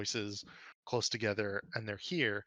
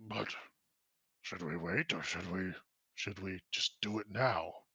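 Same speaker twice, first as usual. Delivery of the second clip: hushed, rough, gravel-edged undertone; 3 semitones lower than usual. Narrator voicing someone unseen inside a building, in a hushed gravelly rough voice. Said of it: "hushed voices from the inside, gravelly, rough".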